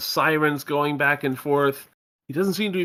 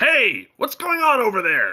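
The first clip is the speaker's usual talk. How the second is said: high, swooping yell projected from afar; 7 semitones higher, 3 dB louder than usual. Narrating a game scene where a woman collapses on the sidewalk; Vince yelling from across the way. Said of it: "you hear Vince yelling from across the way".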